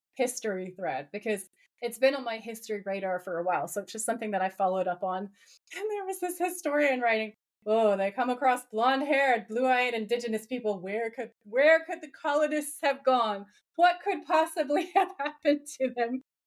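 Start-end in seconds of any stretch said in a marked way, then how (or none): 7.7-16.2 put-on heavy sarcastic tone. Quoting a historian's post from a history thread, mimicking sarcastic tone. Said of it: "And he's so sarcastic".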